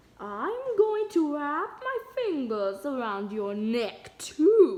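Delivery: very loud, slow, drawn-out spooky ghost voice. Narrator reading Bean pretending to be a ghost to scare Nancy, spooky ghost voice. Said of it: "she held in her spooky voice".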